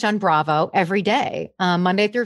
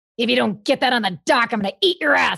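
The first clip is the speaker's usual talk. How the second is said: gritty, blunt, no-nonsense delivery; 3 semitones higher than usual. Describing impressions of men from reality shows: gritty Captain Lee impression. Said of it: "he's always like".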